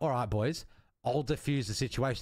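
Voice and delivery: plain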